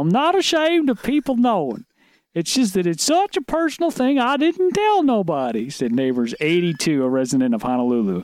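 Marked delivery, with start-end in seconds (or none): 0.0-5.7 very high, swooping, sing-song put-on voice. Reading a quote from an article, the speaker does a Gomer Pyle voice. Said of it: "Can you read that in a Gomer Pyle voice?".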